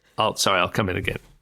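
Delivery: normal talking voice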